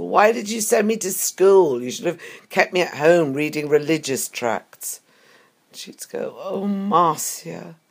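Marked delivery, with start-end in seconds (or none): 0.0-5.0 very loud, mock challenging tone at top of voice. Speaker recounts an argument with her mother about free love, retelling a very loud question. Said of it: "asking her in a very loud voice".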